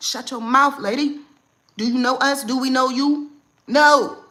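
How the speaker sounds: very loud, firm, deliberate scolding tone. Showing how to tell off a stranger advising about your kid: speaking up assertively. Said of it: "Speak up like this".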